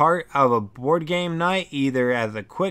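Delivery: plain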